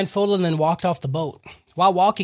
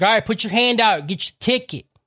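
play-acted loud yelling; 4 semitones higher than usual. Retelling a scene where a guy yells at prisoners: imitating a yell. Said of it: "a dude starts yelling at everybody".

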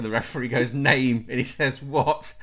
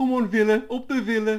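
put-on sad teddy bear voice, much higher; 10 semitones higher, 4 dB louder than usual. Asked to do the Villa fan's voice again, imitating Simon like a sad teddy bear. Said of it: "Sound like a sad teddy bear".

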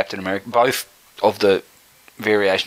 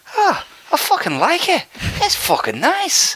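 put-on Irish accent, much higher pitch. Retelling a man's reaction to the podcast, imitating an Irish accent. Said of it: "I'm just going to get the accent of Irish".

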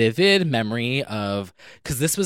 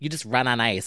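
put-on child voice, quieter; 4 dB quieter than usual. Retelling what a kid said about ice skating: imitating a kid. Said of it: "this kid being like".

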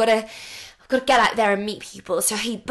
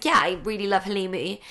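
earnest, unjoking, deadpan, dead-serious delivery; 2 semitones lower than usual. Host describing how Brendan talks, imitating Brendan's deadpan delivery. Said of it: "completely straight-faced when he's telling you".

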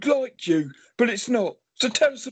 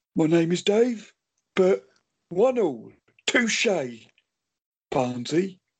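deep put-on voice, pitched even lower; 4 semitones lower than usual. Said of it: "Is that Frank Bruno?".

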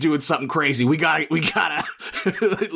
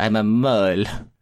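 very low, sinister mastermind villain voice; 7 semitones lower than usual. Asked by another speaker to do the mastermind's voice: Speckles voice. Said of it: "if you could do the voice".

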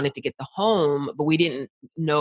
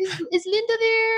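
goofy, silly, high-pitched disguised put-on voice. Retelling a father's prank phone call: imitating dad's silly prank voice. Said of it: "make up little silly voices".

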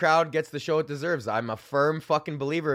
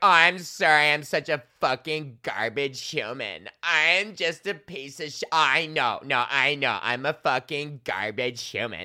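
mock drunk woman's speech. Retelling a heckler's apology at a comedy show: imitating a drunk woman. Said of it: "there's a drunk bitch".

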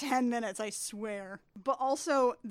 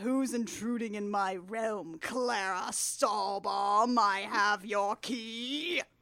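booming giant woman's voice, much slower; 3 semitones lower than usual. Recapping a film scene where a giant woman confronts intruders, in a booming voice. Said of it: "a booming voice that says".

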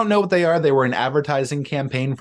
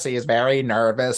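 put-on nervous robot voice. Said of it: "He talks like this".

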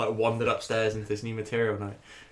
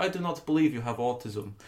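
put-on, thick, laid-on Russian accent. Retelling what a woman at an Exeter gig said to him, thick Russian-ish accent. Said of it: "she's got like a very thick, like kind of like Russian-y type accent".

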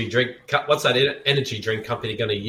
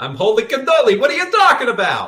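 put-on very high New York accent; 12 semitones higher, 5 dB louder than usual. Imitating what a stereotypical New Yorker would say, in a New York accent. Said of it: "He's from New York".

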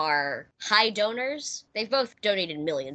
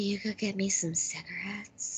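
put-on soft, sultry, seductive sexy voice; 7 dB quieter than usual. Quoting a character's line from an eighties killer-robot movie; put-on sexy voice. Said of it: "apparently I do a good sexy voice".

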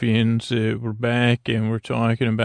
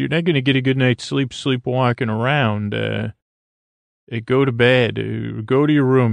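usual speaking voice

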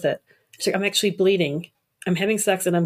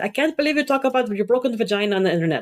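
put-on thick, heavy, old-school Italian accent; 3 semitones higher than usual. Retelling what a mother said about the internet posts: imitating mom's heavy Italian accent. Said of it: "when her heavy accent".

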